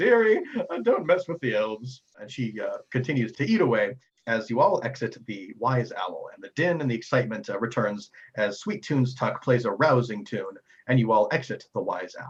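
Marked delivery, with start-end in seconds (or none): 0.0-2.0 high, loud, laughing, mocking lady voice coo. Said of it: "laughs at her and goes".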